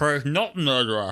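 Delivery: put-on mumbling with mouth stuffed full. Describing a murder-mystery episode's reveal, quoting Donna Noble: Donna Noble talking with mouth full. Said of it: "she's got a full mouth and she's like".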